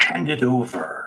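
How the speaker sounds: crackly, crackling voice like talking flames. Voicing a fire spirit that demands an item: crackly fireplace voice. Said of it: "You hear in this sort of crackly, almost fireplace voice".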